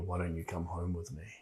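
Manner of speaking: soft, ghostly half-whisper close in the ear. Describing the caretaker spirit propositioning a pretty girl: imitating a spirit's half-whisper. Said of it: "he'll whisper in your ear".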